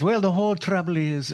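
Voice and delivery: put-on Irish accent. Recalling a grandmother's stock phrase, quote her imitating grandmother's Irish accent. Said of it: "and she had an Irish accent".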